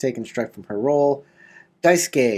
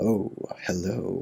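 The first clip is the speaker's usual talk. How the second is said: spider creature voice, lower and quieter; 5 semitones lower, 7 dB quieter than usual. A game master voices a spider that speaks to Naren, talking spider voice. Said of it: "you hear a voice coming from the spider".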